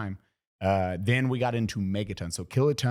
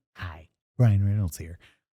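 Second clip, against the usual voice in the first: put-on weird, quiet voice; 3 semitones lower, 3 dB louder than usual. Introducing himself as Ryan Reynolds: Ryan Reynolds voice. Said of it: "his weird quiet voice".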